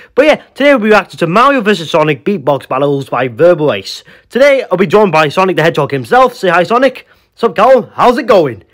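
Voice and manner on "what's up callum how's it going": cowboy-sounding character voice. Playing Sonic the Hedgehog, greeting the host of a reaction video, cowboy-like Sonic voice. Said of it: "I don't know why you're sounding like a cowboy".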